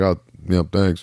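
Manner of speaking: put-on flat, unenthusiastic voice. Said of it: "no enthusiasm in his voice whatsoever".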